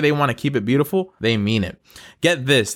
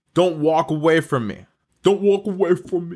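badly done put-on New York accent; 4 semitones higher than usual. Giving the punchline to the riddle, speaking as the fried rice in a bad New York accent. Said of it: "That's a bad New York accent".

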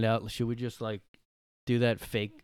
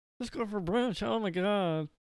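very high-pitched, slow, drawn-out voice; 9 semitones higher, 4 dB quieter than usual. Imagining a pushy lunch invite: imitating Kathy Griffin's voice. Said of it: "Doesn't she talk like that?".

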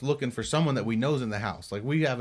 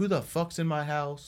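mock angry, raised, irate yelling outburst; 3 semitones higher than usual. Retelling a spooky night when cupboards were found open, imitating Dusty yelling. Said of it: "Dusty's like sitting there yelling".

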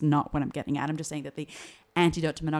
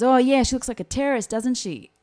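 put-on man's raised, pitched-up Australian accent; 9 semitones higher, 7 dB louder than usual. Retelling what an australian man said to the speaker, in an australian accent. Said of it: "the Aussie kind of man talked like this".

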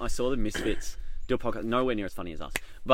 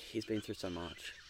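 put-on mumble under breath, much quieter; 3 semitones lower, 14 dB quieter than usual. Recounting the drive home, speaker quotes what she said, mimicking a mumble under breath. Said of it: "mumbled under her breath".

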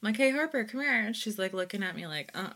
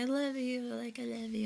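mock sweet, nice, doting voice; 5 dB quieter than usual. Retelling a loving text sent to a son: imitating own sweet tone. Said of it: "being all sweet and nice to him".

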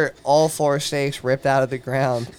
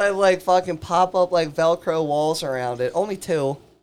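plain

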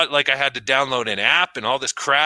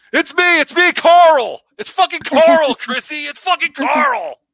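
very high-pitched, loud character voice; 7 dB louder than usual. Joking about a face reveal of the masked character, in a Carl voice. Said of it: "That was a good Carl voice".

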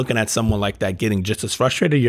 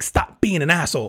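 mock fed-up scolding, pitched up; 6 semitones higher than usual. Retelling telling off a petty son: imitating own fed-up scolding. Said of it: "one of those things where I'm sick of it".

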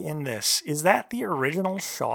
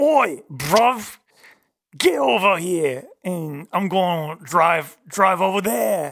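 loud British tough-guy action-hero voice; 2 semitones higher, 6 dB louder than usual. Asked by another speaker how Jason Statham sounds, answer in a Jason Statham voice. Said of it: "how does Jason Statham sound".

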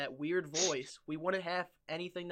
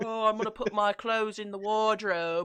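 loud, mocking put-on British accent; 3 semitones higher, 5 dB louder than usual. Acting out a british person's words, in a mocking british accent. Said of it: "I'm British".

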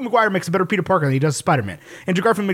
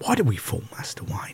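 hushed voice, starting high and sliding low; 10 semitones lower, 8 dB quieter than usual. Joking about how hard it is, the speaker does a Michael Caine impression, high to low. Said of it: "You start up here, and then you end down here".

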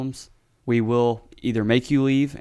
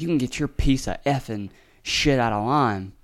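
rude, scolding rural American woman's voice. Retelling what a lady shouted at another car: imitating a redneck lady. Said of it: "super redneck lady gets out of her car".

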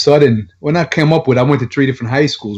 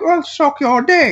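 gummy, toothless, very high put-on British accent. Retelling what a strange lady in Gordon Heights said, in a British accent. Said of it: "she had a British accent".

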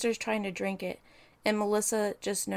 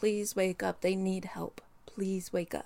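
put-on desperate, pleading voice. Retelling how a seven-year-old begged her mother to wake up: imitating someone pleading. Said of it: "pleading and begging with her mother to wake up".

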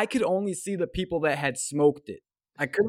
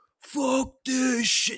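acted-out, very high, shrill drunken outburst; 10 semitones higher than usual. Retelling what a hammered guy across the street yelled: imitating a drunk guy yelling. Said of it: "just yells out".

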